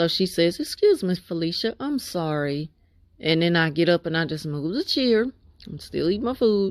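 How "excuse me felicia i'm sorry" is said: put-on, falsely polite, considerate-sounding tone. Retelling what a woman said on entering the room: imitating a falsely polite tone. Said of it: "They always speak in that tone when they wanna sound so polite".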